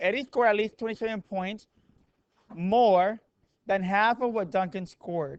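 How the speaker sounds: slow, deliberate, careful word-by-word delivery. Going over graded homework, the speaker rereads problem eight, speaking slowly. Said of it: "let me say it slowly".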